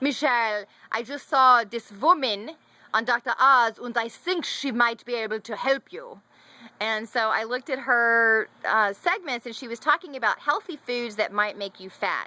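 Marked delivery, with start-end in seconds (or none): 0.0-6.2 put-on German accent. Quoting a woman who recommended someone she saw on tv: imitated german accent. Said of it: "she said it in a German way".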